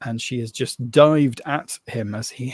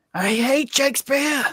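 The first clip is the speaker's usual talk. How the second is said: very high, screeching, screaming witch voice; 14 semitones higher than usual. Voicing a witch diving at a player: witch screaming. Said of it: "She screams".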